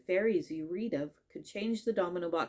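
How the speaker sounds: ordinary delivery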